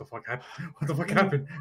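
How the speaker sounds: frantic, panicked, freaking-out alarm. A storyteller voices Drac's thoughts after something has gone wrong, Drac internally freaking out. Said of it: "now he's internally freaking out".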